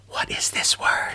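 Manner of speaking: soft, breathy, hushed whisper. Showing how they whisper a question to get young readers going, whispering. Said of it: "I go whisper".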